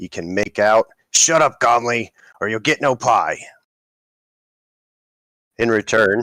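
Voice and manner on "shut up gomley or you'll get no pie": loud, forceful yelling. A woman carrying a tray of ales yells back at somebody: yelling back at someone. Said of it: "yelling something back at somebody".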